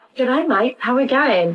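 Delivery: terrible, put-on Australian accent. Quiz host greets the quiz-taker before an Australian slang quiz, terrible Australian accent. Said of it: "I'm not sticking with my terrible Australian accent".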